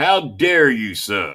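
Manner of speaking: put-on Southern grandpa voice. Scolding a relative, then imitating a Southern grandpa: imitating a Southern grandpa. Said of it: "Now I'm talking like my Southern General Pop".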